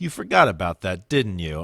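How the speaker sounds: dry, needling, sarcastic teasing with swooping pitch. Retelling what the listener said after the speaker forgot something: mock-sarcastic teasing. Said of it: "sarcastically in my ear be like".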